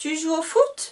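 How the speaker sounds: high, climbing rise on foot. French lesson on question intonation: high rise on foot. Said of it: "je vais avoir ici une intonation différente. Je vais être dans l'aigu".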